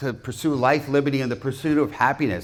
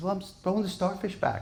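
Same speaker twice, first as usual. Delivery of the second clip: put-on high, innocent, guileless little boy voice; 6 semitones higher, 8 dB quieter than usual. Telling a story, voicing a young boy answering an old man: innocent young boy voice. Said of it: "with his innocence".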